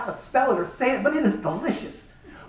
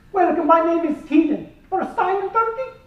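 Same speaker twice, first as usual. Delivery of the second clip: bad put-on Turkish accent, pitched up; 6 semitones higher than usual. Retelling meeting a tour guide, the speaker voices Keenan in a bad Turkish accent. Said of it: "this is a bad Turkish impersonation".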